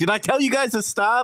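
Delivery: play-acted aggressive shout, very high. Describing a man who makes everyone in the gym stop, retelling an aggressive yell. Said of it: "he like yells or like gets aggressive".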